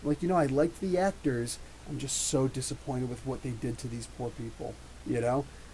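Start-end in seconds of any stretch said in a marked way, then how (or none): none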